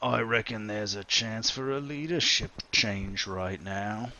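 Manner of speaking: tough, hulking pirate bruiser voice. Voicing a big bruiser pirate who challenges the player: big bruiser pirate voice. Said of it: "this big bruiser of a pirate, and says".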